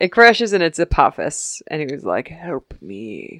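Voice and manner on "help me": low, barely audible, pathetic pleading murmur. Retelling a TV scene where Apophis crashes, in an Apophis impression. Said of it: "That was a good impression".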